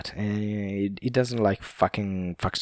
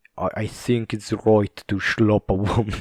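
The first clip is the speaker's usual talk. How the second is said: put-on Scottish accent. Retelling what a Scottish man said, the speaker does a Scottish accent impression. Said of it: "he's got this Scottish accent".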